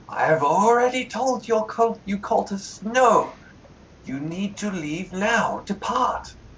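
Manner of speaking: high-pitched voice with echo. Narrator in a role-playing game voices an unseen figure upstairs, in an echoing voice. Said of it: "you hear an echoing voice from upstairs saying".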